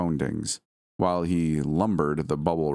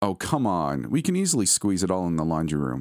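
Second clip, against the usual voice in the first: ordinary delivery, nothing marked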